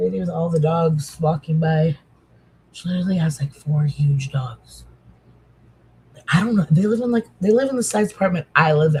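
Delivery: hushed whispering voice. Describing a neighbor walking her dogs past an open window, whispering. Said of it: "I'm like whispering".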